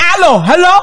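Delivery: very loud, high-pitched yelling. Speaker mocking someone who yells when calling family, mock yelling into phone. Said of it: "you gotta yell?".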